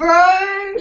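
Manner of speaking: very high-pitched, loud, jokey bro voice. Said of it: "I'm always like".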